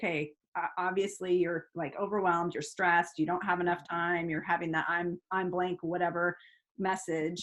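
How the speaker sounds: ordinary talk, nothing marked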